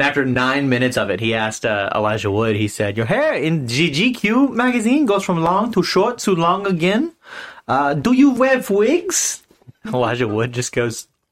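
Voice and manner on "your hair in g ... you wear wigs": put-on pitched-up crude German accent. Retelling a prank with a fake German reporter: imitating an offensive German accent. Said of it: "he did a very offensive German accent".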